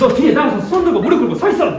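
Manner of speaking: high-pitched, loud, furious yell like an angry teacher.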